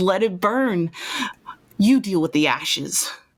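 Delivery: speaking with a cackling laugh. Game master voicing a grabbed, threatened character who answers back, cackling. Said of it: "he just kind of cackles and laughs and says".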